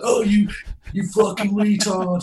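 very slow, high, drawn-out screamed jeer. Retelling what people playing cricket by the bins scream: imitating someone screaming. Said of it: "they're screaming horrible things like".

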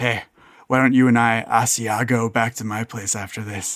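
whispering. A character leans back in his chair, speaking sideways to another character, in a whisper. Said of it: "just in kind of a whisper".

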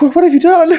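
very high, shrieking cry. The narrator voices Maria reacting to the broken weapons: Maria shrieking. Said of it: "Maria kind of shrieks and goes like".

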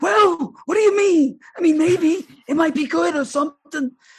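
very high, wavering, noncommittal musing tone. Imitating how a show host would react to arguing monarchism: Schiff impression. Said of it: "Schiff would be like".

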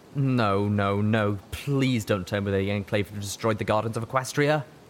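ordinary delivery

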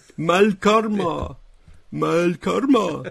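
put-on high, loud, very slow, drawn-out cartoon voice. Showing the voice he has to use to make people laugh: cartoony voice. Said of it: "I have to talk in this completely different cartoony voice".

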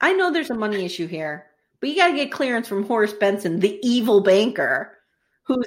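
ordinary delivery

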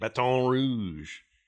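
put-on French accent pronouncing Baton Rouge. Saying the city name after giving its French meaning: put-on French accent. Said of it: "Please don't do that accent".

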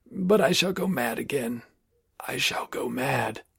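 desperate voice dying into a choking rattle. Reading a broken man's outburst, voice dying into a choking rattle. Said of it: "His voice died into a choking rattle".

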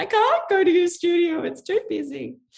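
classic mum voice, pitched very high. Talking about going to the studio, she quotes her mum: imitating her mum's voice. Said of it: "That's my mum's voice".

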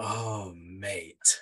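sexual-sounding delivery. Giving a football exclamation when asked, sexual-sounding delivery. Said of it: "Why make it sexual?".

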